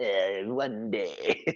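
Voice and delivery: put-on, broken olde English British brogue. Teasing another speaker's wizard voice: mock British brogue. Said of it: "Is that how you see all British people?".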